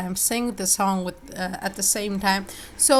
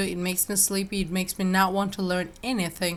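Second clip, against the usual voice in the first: plain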